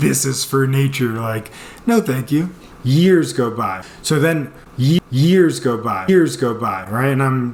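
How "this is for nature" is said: usual speaking voice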